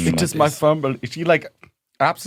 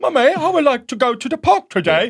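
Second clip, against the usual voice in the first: put-on very high, loud, childlike English accent; 12 semitones higher, 6 dB louder than usual. Retelling a childhood memory, the speaker quotes their young self asking mummy: childhood english accent. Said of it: "when I was a kid I had an English accent".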